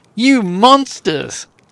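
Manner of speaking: openly disgusted outcry. Voicing Sela, who sees her allies are monsters: open disgust. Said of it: "with open disgust".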